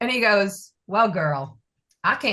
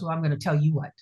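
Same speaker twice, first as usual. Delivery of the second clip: mock, acted tough-guy tone, lower; 4 semitones lower, 4 dB quieter than usual. Retelling what a customs officer told them, imitating an officer acting tough. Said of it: "And he said it like that".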